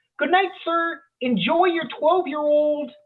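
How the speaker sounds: mock very high, loud, clear, carrying voice. Retelling what the cashier said to him after he paid, loud, clear voice. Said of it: "says to me in a loud, clear voice".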